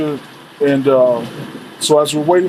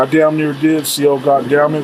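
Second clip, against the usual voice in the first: ordinary talk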